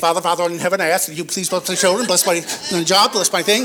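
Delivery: low, rapid auctioneer-style delivery. A speaker demonstrates a rushed prayer, rattled like an auctioneer. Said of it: "you begin to sound like an auctioneer".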